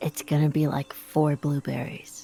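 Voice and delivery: very quiet, soft, hushed whisper. In a role-play, Nara leans up to Asbo to speak: very quiet whisper. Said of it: "very quietly whispers".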